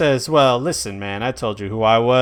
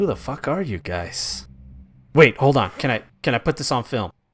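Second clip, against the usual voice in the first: slightly hushed, low-key voice. Voicing a character who overhears the group and asks who they are: a little hush-hush. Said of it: "a little bit hush-hush".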